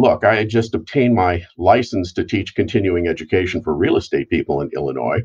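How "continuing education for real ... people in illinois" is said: normal talking voice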